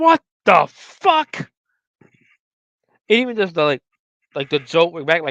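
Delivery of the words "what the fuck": piercing, shrill scream at a very high pitch. Retelling a film scene where Clayton screams: imitating a scream. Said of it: "Clayton screams".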